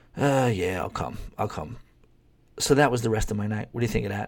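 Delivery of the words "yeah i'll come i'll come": reluctant, unenthusiastic, half-hearted, can't-be-bothered. Retelling how the guy she's dating accepted the invitation: imitating an unenthusiastic reply. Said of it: "very unenthusiastically just goes".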